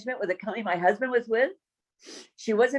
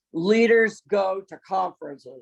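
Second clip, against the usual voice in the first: deep-voiced, slow, deliberate delivery; 3 semitones lower, 4 dB louder than usual. Retelling a man's reply after she refused a conference trip, imitating his deep voice. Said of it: "this deep voice".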